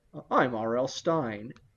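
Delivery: put-on voice, very slow, a touch of Manhattan accent. Describing how the author talks, imitating his Manhattan accent. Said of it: "a little bit of that Manhattan accent".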